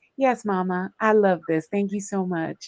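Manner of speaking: put-on voice for a pet. Speaker shows the voice they do for a pet animal, voice done for the pet. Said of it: "That's baby's voice".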